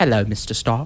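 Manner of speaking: very low, soft, deep voice. Trying out a Jarvis impression after describing it: low, soft Jarvis voice. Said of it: "It's low and soft, but it's deep".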